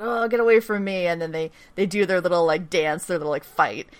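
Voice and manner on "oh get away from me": put-on half-awake, groggy, grouchy grumble. Retelling a scene where a drugged character is woken: imitating a groggy grumpy reply. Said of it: "super groggy and grumpy".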